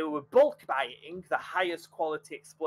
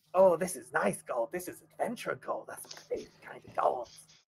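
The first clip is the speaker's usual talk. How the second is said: put-on tiny goblin character voice. Narrating a game, voicing a tiny goblin inspecting gold, in a tiny goblin voice. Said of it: "and it's a teeny tiny little goblin".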